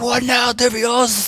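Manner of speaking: put-on taunting, very high, crazy Spanish accent. Describing Maniac outplaying Divios at Worlds; Maniac's crazy Spaniard accent. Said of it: "in his crazy Spaniard accent".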